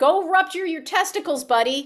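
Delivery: high-pitched, shouted-out yell. Retelling what a player yelled at her opponent: imitating someone yelling. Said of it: "she yelled out".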